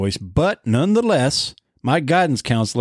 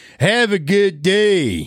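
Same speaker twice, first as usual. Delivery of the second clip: put-on obnoxious jerk voice, much higher; 7 semitones higher than usual. Retelling a story, the speaker voices a guidance counselor who became a prick, prick voice. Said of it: "I was going to have a prick voice in there".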